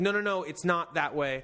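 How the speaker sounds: normal talking voice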